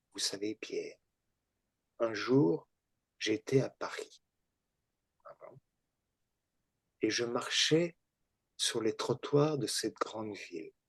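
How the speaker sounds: small, gentle, very mild voice, low and quiet. Recalling what a man said to him one day, imitating the way he talked. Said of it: "il parlait comme ça".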